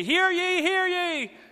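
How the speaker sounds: put-on shrill, high, drawn-out old-time town crier call. Speaker comparing a shouting woman to a town crier; loud town crier call. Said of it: "yelling with a loud voice like this town crier".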